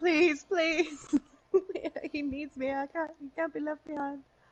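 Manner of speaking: put-on tearful, begging, crying voice. Retelling how Emily begged during the bunker event: imitating Emily begging and crying. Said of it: "begging and crying".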